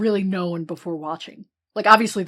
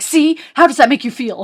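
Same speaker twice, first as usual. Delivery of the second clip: very loud, very high, aggressive scream; 8 semitones higher, 10 dB louder than usual. Describing how a man screamed at someone, retelling an aggressive scream. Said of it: "scream at Jeff Goldblum and be like".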